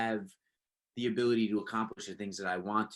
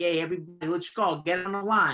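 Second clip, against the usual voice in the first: put-on loud, high New York Italian accent; 9 semitones higher, 6 dB louder than usual. Recalling making teammates laugh as a kid; New York Italian accent. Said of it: "do the like the New Yorker Italian like accent".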